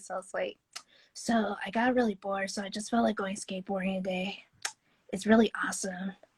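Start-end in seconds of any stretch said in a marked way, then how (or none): 1.1-6.1 put-on little boy voice. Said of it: "I can sound like a kid, like a little boy voice".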